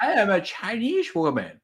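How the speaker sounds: fake Chinese accent, high and swooping pitch. Describing people waking from head trauma speaking another language, in a fake chinese accent. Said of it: "speak another language".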